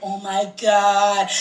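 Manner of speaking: very low, mumbled voice. Retelling how guys react when checking someone out: imitating a guy muttering under his breath. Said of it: "say some shit under their breath".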